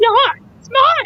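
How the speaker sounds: very high-pitched bickering, squabbling toy train voice. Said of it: "when he says".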